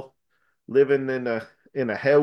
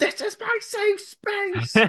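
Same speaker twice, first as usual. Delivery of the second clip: mock shrill, very high yelling outburst. Recounting a scene from a show where someone ran out of the room; retelling a yell. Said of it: "Pagan yelled".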